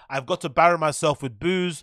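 normal talking voice

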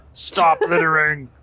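mock angry, scolding voice. Voicing the mad darkness about dumped rubbish: imitating the mad darkness. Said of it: "He's like".

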